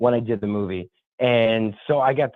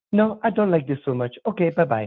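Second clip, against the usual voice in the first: put-on woman's voice, French Canadian accent, much higher; 3 semitones higher than usual. Retelling a movie outing, the speaker quotes the woman's reply, imitating Mimi's French Canadian accent. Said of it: "French Canadian accent".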